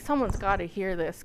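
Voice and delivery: ordinary talk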